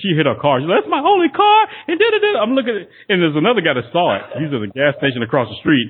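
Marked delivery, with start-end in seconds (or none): 0.8-2.4 play-acted, very high, panicked, freaked-out outburst. Retelling a crash victim's words after hitting her car: imitating someone freaking out. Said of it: "She's freaking out 'cause her".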